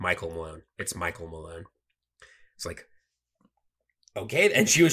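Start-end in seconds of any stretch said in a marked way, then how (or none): 0.0-1.6 dry deadpan, very quiet, low and hushed. Retelling a coach correcting a halftime interviewer, imitating Michael Malone's deadpan. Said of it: "he's just like deadpan".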